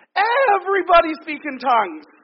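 booming, very loud, shrill, swooping, drawn-out yell. Retelling what he yelled out to everyone at youth group; retelling a yell. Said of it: "he yells out".

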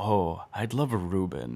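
very slow musing, each word drawn out. Retelling a podcast guest describing a Reuben sandwich: Jeff Goldblum voice. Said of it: "in a very Jeff Goldblum way".

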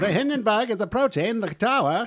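put-on old-timey, vintage radio announcer voice. Answering a request to do an old-timey radio announcer voice. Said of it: "Can you do an old-timey radio announcer?".

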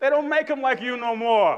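put-on New York accent. The speaker rephrases a compliment the way a New Yorker would say it, in a New York accent. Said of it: "as a New Yorker would say".

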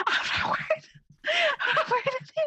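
very high, rushed, alarmed urgent whisper. Agreeing and showing how the whispered line sounds: urgent alarming whisper. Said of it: "It does sound urgent and alarming".

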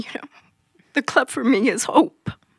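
tearful, holding back tears. Talking to the club members who gave the speaker a position there, tearful. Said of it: "I didn't want to cry".

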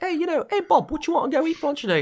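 very high-pitched put-on Cockney man's voice. Imagining two guys talking, voicing one of them in a Cockney British accent. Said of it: "two guys with Cockney British accents talking back".

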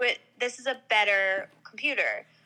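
ordinary talk

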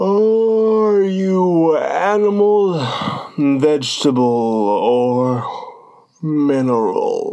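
weary, yawn-broken, drawn-out words. Narrator reads the lion's question to Alice: yawning at every other word. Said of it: "yawning at every other word".

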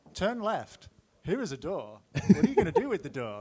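put-on, animated American accent with swooping pitch. Acting out an old game played on the BBCs at work, American accent. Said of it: "Is that American yeah, accent again".

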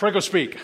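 rapid words blurred and run together. Showing how a three-word title sounds when said really fast. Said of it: "if you say it really fast, it sounds like a fancy Italian dish".

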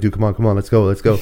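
ordinary talk

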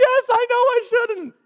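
play-acted sobbing, very high-pitched and loud. Telling a story, speaker quotes a man who broke down: imitating a man breaking down bawling. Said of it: "starts bawling".

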